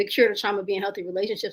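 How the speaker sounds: fast, level, rattled-off delivery.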